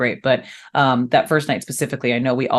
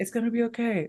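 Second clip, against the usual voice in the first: very hushed, very soft, calm, utterly unbothered; 9 semitones higher, 10 dB quieter than usual. Retelling how a man answered after she screamed an apology, imitating Clark's calm voice.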